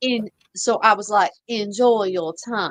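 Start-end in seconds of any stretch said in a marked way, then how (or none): 1.5-2.7 put-on Savannah Southern accent. Retelling locking a woman in a jail cell, in a Savannah Southern accent. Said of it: "a Savannah Southern".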